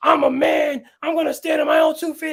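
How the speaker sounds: put-on, very high, riled-up wrestling-hype yelling. Imitating a wrestler's promo against his opponent: imitating a wrestler yelling.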